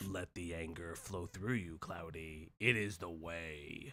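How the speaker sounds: very low, very soft, hushed weird grumbling. Goading another speaker to say it, in a weird grumbly voice. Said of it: "Now you're doing some weird grumbly stuff".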